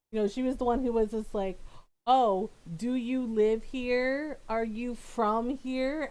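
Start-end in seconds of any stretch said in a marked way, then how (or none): 2.0-6.1 put-on slow, deliberate, spelled-out, drawn-out delivery. Retelling what a neighbour lady asked: imitating a lady's loud voice. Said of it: "a really loud voice".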